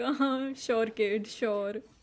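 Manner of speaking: acted dismissive laughter. Retelling how someone's mother reacted to a claim: imitating mom laughing at a joke.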